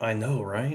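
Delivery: soft, half-whispered voice. Half-whispering a reply back to a companion in the game: half-whispering back in character. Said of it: "I'll whisper back".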